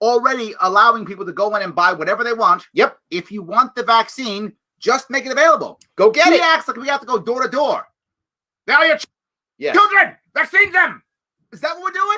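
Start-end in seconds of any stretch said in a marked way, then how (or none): 8.7-11.0 clumsy, bad, pitched-up fake German accent. Acting out what he implies about vaccines, in a bad German accent. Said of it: "I did a bad German accent".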